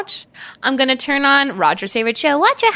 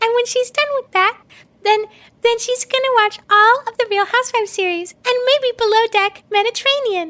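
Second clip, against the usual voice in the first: put-on baby voice, higher pitched; 9 semitones higher than usual. Letting the unborn baby Roger Roger speak through her mouth. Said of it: "This is his voice about to come out of my mouth".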